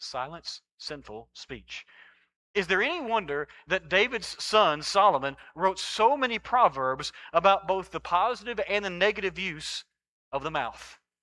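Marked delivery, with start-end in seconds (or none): 0.0-1.9 deliberate, very quiet, very slow, word by word. Repeating the phrase for listeners, saying it very slowly. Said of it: "Say that very slowly".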